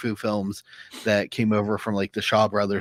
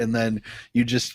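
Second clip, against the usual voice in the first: ordinary delivery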